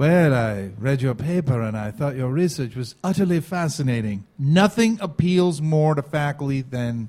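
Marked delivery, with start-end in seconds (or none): 0.0-4.2 low-pitched, posh British accent. Advising how to email faculty about their research, in a Stewie voice. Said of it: "You may not want to use that accent".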